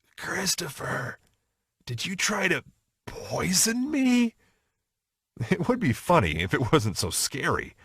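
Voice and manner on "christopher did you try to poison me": hoarse, sickly, slow, dragging rasp. Retelling what a confused, sick mom said: imitating a rough, sickly voice. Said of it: "said in a very rough and sickly voice".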